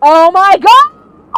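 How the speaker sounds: slow, loud, high, excited cry of relief.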